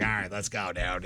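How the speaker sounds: imitated Chicago accent. Retelling what the man he drove to work said, imitating his Chicago accent. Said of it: "in his Chicago accent".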